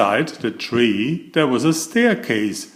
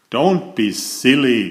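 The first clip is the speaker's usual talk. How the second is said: snorting dismissively, scornful. Reading a story aloud, a rude rich man refusing a goblin: snorting dismissively. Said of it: "snorted Mister Uppity".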